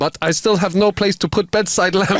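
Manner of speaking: put-on Soviet-sounding accent. Telling a joke, giving the woman's punchline at the end: weird Soviet accent. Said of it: "move into some weird Soviet accent".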